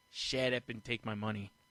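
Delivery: ordinary delivery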